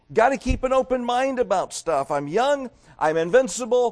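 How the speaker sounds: put-on high-pitched, loud, arrogant, boastful young man voice. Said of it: "the guy who arrogantly says".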